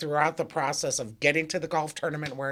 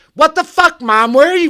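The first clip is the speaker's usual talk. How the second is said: very high-pitched, very loud, shrill scream; 12 semitones higher, 17 dB louder than usual. Retelling a phone call, the speaker acts out the caller: imitating someone yelling. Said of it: "And he's just yelling at me".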